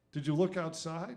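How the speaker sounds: ordinary delivery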